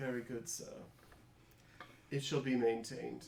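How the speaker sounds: snooty, contemptuous butler voice, barely hiding disdain. Voicing a butler who is trying to be hoity-toity and straight: contemptuous hoity-toity butler voice. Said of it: "trying to be all hoity-toity and straight".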